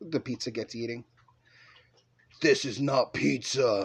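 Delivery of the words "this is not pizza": deep growl from low in the chest. Reading a story where the pizza speaks, in a deep growling voice. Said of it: "the pizza growls in a deep voice".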